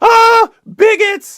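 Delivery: piercing, shrill, high shriek at full volume. Telling the story, the speaker acts out a woman coming back and screaming, retelling a scream.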